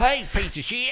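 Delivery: Southern accent, pitched very high. Showing another speaker how to say the line: Southern accent.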